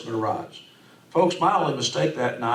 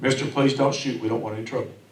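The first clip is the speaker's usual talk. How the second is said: ordinary talk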